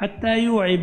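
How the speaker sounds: normal talking voice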